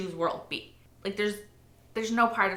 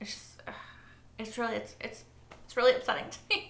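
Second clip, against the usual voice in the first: soft, tearful, breathy crying with voice cracking; 4 semitones higher, 5 dB quieter than usual. Speaking to viewers about a show, crying, voice breaking. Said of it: "I know it's kind of silly that I'm crying".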